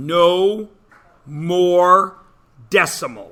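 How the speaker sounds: slow, loud, deliberate, every word clearly enunciated. Stating a new rule for math class: slow, loud, enunciated. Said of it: "I said it slow, I enunciated, and I said it loud".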